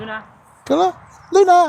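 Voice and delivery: very high, eager, excited calling voice. [name] calls the dog Luna during heel training; high excited pitch. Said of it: "Nice high pitch, [name]. Excited pitch".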